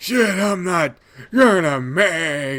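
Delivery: raspy, ragged loud call. A narrator reads a man falling behind calling after the narrator, in a hoarse, ragged voice. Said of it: "He calls after me in a hoarse, ragged voice".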